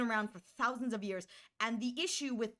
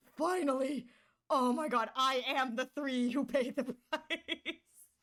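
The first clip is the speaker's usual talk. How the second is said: acted excitement in character voice; 2 semitones higher than usual. Acting out Blade finally getting to die: acting excited as Blade. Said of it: "Man's gonna be so excited".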